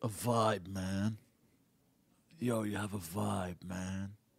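classic stoned stoner-dude voice. Speaker quotes how a pothead would say it, in a pothead voice. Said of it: "as a pothead would say".

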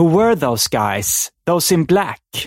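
put-on slight Swedish accent in English. Retelling a scene where a rescued woman asks a question, slight Swedish accent. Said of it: "med lite svensk brytning".

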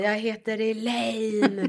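play-acted loud, proud shout at full yell. Retelling standing on a chair in class: imitating her own childhood shout. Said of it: "jag kom ihåg att jag skrek och ställde mig upp".

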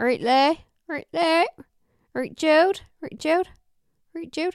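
put-on Bristol accent laid on thick. Imitating a sister's ex greeting people, in a thick Bristolian accent. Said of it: "he has this thickest Bristolian accent".

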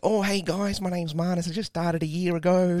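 exaggerated Australian accent. Retelling meeting comedians in Japan, quoting his past self in an exaggerated Aussie accent. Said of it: "In that, in that voice?".

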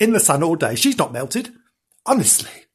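ordinary delivery

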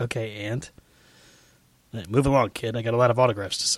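dry, flat, dismissive deadpan. Retelling a star's answer to a fan's greeting: imitating a deadpan reply. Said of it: "deadpan look".

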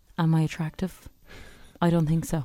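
put-on husky voice. Asked to let the others hear his voice, the speaker tries a put-on husky voice. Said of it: "I'm husky now".

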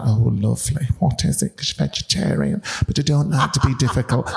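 put-on breathy Hull accent. Speaker acts out Marion's reply when told tea was made: imitating Marion, breathy. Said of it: "Marion's from Hull and talks like that. Everything's very breathy".

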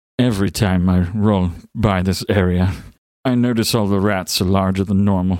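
sweet, buttery put-on voice. Demo of the character Starchild's thoughts, Orson Welles voice. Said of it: "thinks in the sweet buttery voice of Orson Welles".

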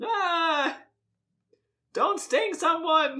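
loud, very high, slow, drawn-out cry. Opening a new impression for the co-host: Jerry Seinfeld in Bee Movie voice. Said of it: "I'm sticking with this".

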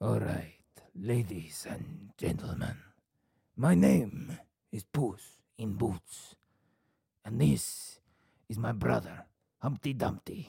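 very loud, grand announcer voice. Urged by the other speaker to do Puss in Boots; Puss in Boots voice. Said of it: "Why don't I just give you Puss in Boots?".

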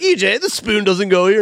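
sassy, high telling-off tone. Acting out an imagined comedy sketch, partner corrects someone: mock sassy scolding. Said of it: "she'd put her hands on her hips and be like".

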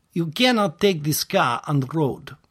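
rough, attempted Russian accent. Speaker trying out an accent to show how it goes: attempted Russian accent. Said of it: "It's a Russian accent".

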